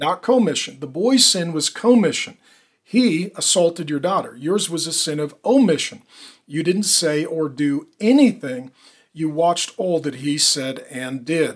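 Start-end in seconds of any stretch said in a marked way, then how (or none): none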